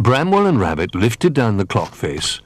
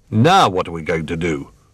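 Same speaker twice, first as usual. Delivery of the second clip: ordinary delivery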